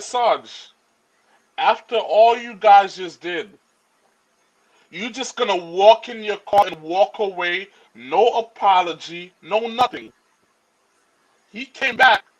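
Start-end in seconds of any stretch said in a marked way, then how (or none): none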